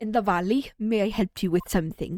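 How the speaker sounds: put-on accent that came out Scottish. Voicing a game character for the first time, trying a new accent: put-on accent that came out Scottish. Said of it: "that's not Scottish. That's Scottish".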